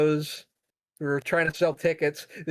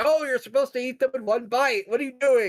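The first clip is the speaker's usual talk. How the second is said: put-on Indian accent, higher pitch; 8 semitones higher than usual. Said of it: "the guy's putting on an Indian accent".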